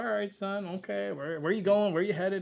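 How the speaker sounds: put-on Texas drawl. Speaker acts out a police officer questioning a driver, police officer's Texas drawl. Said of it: "Every police officer here has got a bit of a drawl".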